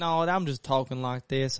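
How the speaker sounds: put-on Southern country accent. Retelling answering people who asked where they were from, country accent. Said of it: "I was talking in a country ooh".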